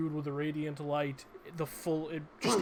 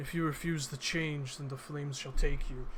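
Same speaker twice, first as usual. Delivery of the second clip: low muttering under her breath. Voicing a character who mutters a threat while swinging a sword: muttering under her breath. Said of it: "she just chants under her breath".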